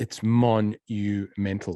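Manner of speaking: monumental drawn out slowly, mental stressed.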